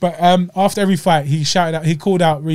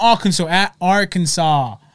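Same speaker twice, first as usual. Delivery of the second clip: ordinary talk, nothing marked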